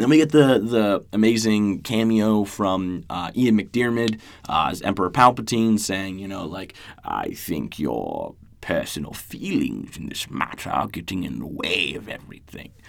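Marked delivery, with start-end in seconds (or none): 7.0-12.7 badly done deep, rough, creaky put-on voice. Retelling a scene from the series: terrible Emperor Palpatine impression. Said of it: "It was a terrible, terrible impression".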